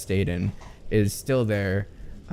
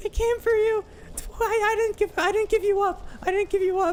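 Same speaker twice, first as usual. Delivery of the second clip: put-on loud, shrill, very high-pitched child voice. Voicing a character in a game scene, the speaker uses a loud child voice. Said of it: "I can't do that voice in a whisper".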